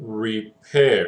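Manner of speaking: repair with the weight on -pair. English lesson on word stress, saying repair: stress on second syllable pair. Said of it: "we're going to put emphasis on the A I".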